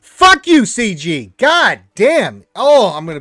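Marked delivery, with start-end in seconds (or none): 0.2-2.5 very slow, seething, dragged-out angry swearing. Ranting with friends about game difficulty, getting angry. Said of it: "I'm getting angry".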